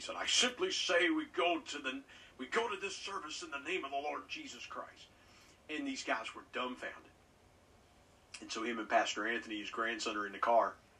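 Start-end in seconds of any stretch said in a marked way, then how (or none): 0.2-5.1 big, boisterous, pitched-up preacher voice. Retelling a story the pastor told, quoting Brother Cole: Brother Cole's big boisterous voice. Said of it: "as only he could in that big boisterous voice".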